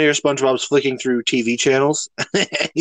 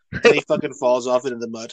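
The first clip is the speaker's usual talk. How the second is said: ordinary talk, nothing marked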